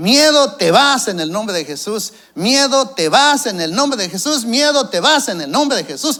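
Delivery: loud, high shouting, same words over and over. Recalling how a woman suddenly began shouting, retelling her shout. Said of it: "empezó a gritar".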